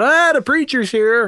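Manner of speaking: high, really loud yell. Retelling a friend greeting him at the door: imitating someone yelling loudly. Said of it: "he yells really loud".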